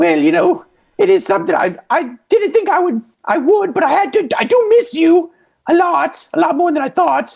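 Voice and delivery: put-on very high parrot voice with Irish accent. Playing a pirate's parrot talking to him, in an Irish Dobby voice. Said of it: "your parrot voice is just Irish Dobby".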